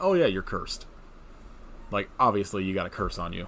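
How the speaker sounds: ordinary talk, nothing marked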